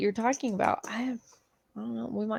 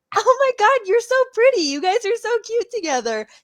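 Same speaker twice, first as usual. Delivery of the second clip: gushing, very high and loud voice; 12 semitones higher, 8 dB louder than usual. Acting out Cece greeting a new girlfriend: imitating Cece. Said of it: "She is that stupid bitch that comes up to you".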